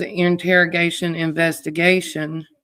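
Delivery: normal talking voice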